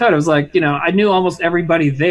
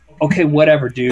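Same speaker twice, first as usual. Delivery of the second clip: mock-annoyed, pissed-off tone, much lower pitch; 4 semitones lower than usual. Retelling a drunk fan's reply at a bar, retelling a pissed-off reply. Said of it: "he was like all pissed at me".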